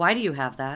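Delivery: put-on, pointed, accusing tone. Retelling how Brandon pointed at a fridge sticker: imitating Brandon's accusing tone. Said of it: "he said to me accusatorily".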